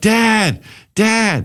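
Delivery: mock, very high, tearful child's crying yell. Recalling being pinned down by his brother as a kid; retelling yelling for dad. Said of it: "I would start yelling like".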